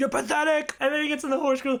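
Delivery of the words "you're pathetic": put-on scream, higher. Retelling a movie scene where the zookeeper screams in faces: imitating the zookeeper screaming. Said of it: "He just starts screaming in her face".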